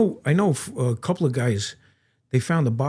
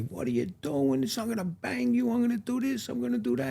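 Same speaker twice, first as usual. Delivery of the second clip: very high, in-your-face acted yell, rising in pitch; 11 semitones higher, 8 dB quieter than usual. Retelling an inspector standing in one's face: imitating Zagabini yelling. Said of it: "he's standing in my face yelling at me".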